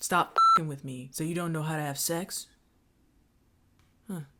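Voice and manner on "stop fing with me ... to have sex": put-on creepy old man voice, lower and quieter. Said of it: "they just all kinda talk like this".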